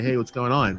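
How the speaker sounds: calling out loudly. Calling out to a character walking down the stairway: calling out. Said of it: "I'm gonna call out and say".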